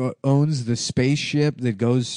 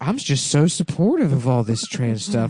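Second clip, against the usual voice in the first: put-on creepy older man voice. Mocking a creepy older guy with an imitation: imitating a creepy pedophile. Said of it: "a pedophile that's like".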